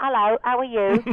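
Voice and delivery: put-on slipped-into Cockney accent. Recalling how he talked on set so as not to be different, Cockney accent. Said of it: "So I talked like that".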